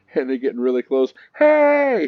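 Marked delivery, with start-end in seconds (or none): 1.4-2.1 high, loud yell of hey. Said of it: "like this".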